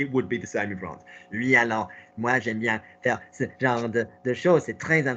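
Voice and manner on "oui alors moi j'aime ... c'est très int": nerdy, one-note, twangy, geeky voice speaking French. Showing a learner how a voice all on one twang sounds in French: twangy geeky voice. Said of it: "someone's voice was entirely on that one twang".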